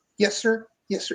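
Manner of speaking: small, soft, tiny little voice. Retelling someone answering a man yelling down the corridor, in a little voice. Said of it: "you hear this little voice".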